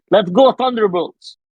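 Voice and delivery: put-on high scream in a thick Russian accent. Picturing a movie character yelling the team name: Red Guardian screaming, thick Russian accent. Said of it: "Alexei or Red Guardian screaming ... in a heavy, thick Russian accent".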